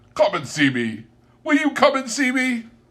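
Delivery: overjoyed, very high-pitched, swooping sing-song delivery. Narrator reads Scrooge speaking to the old gentleman after their handshake, Scrooge's voice, delighted. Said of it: "[name] regarded everyone with a delighted smile. / said [name]".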